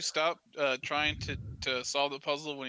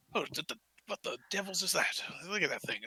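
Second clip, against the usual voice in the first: stumbling, hushed half-whisper; 3 semitones higher than usual. Voicing onlookers reacting to a creature's body: hushed half-whispered exclamation. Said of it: "whispering in the hushed voices".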